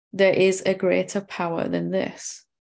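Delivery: ordinary talk, nothing marked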